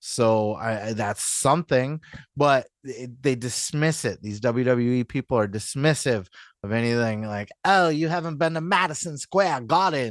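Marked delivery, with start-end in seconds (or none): 7.6-10.1 attempted put-on British accent. Mimicking dismissive WWE people, in a put-on British accent. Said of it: "It's the best British accent I could do".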